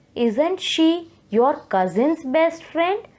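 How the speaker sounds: tag-question tune, pitch climbing upward at the end. Explaining question intonation, saying an example question with a rising question intonation. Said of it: "So the tone has risen up".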